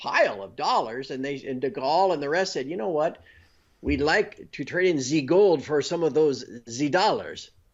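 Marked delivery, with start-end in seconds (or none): 2.7-7.5 bad put-on French accent. Acting out what de Gaulle and the rest said, bad French accent as de Gaulle. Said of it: "Bad French accent".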